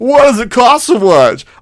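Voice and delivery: high, snide, sneering complaining voice. Retelling how someone quotes you in a story: imitating a snide disagreement voice. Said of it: "does that voice become a thing".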